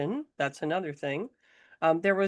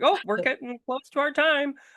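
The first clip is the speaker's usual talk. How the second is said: voice pitched up higher; 8 semitones higher than usual. Teasing the other speaker about the voice they use, higher mom voice. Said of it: "it it goes up higher".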